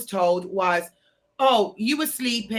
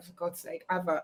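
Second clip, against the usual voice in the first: soft whisper under the breath; 5 semitones lower, 10 dB quieter than usual. Retelling what the lawyer said during a police interview: imitating a whisper. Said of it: "And he whispered to me".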